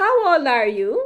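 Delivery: rising pitch at end. Explaining questions, speaker rereads an example sentence with questioning rising intonation. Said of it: "when I read that sentence like that".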